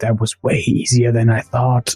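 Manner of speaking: quiet, hushed whisper. Speaking to teammates after riding through, whispering. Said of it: "and I'm whispering".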